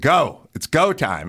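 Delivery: slow, drawn-out, urging, yelling tone. Retelling urging a friend to go, imitating someone yelling. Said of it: "I'm yelling".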